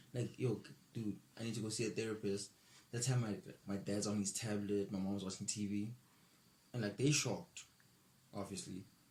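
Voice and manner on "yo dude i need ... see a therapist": plain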